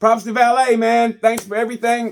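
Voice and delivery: tearful voice on the edge of crying. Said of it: "now I feel like I'm crying".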